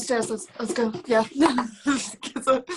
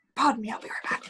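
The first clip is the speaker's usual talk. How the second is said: hushed, breathy whisper; 5 dB quieter than usual. A player has her character excuse herself to the group, whispering. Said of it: "She's gonna like whis- whisper to the group".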